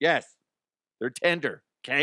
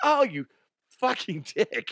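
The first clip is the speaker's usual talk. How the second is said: playful and raised in pitch, spoken through laughter; 6 semitones higher than usual. Retelling a joking reply to a friend's punch: retelling a laughing insult. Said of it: "Laughing, of course".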